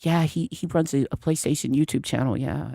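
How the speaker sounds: quiet, hushed, half-confided whispered aside. Acting out people at a cookout talking about someone: imitating someone whispering. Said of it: "and then they just whisper".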